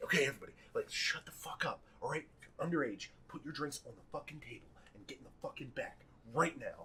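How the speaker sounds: harsh, hushed whisper, forced out. Retelling how party guests told minors to hide: imitating a harsh whisper. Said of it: "doing this harsh whisper".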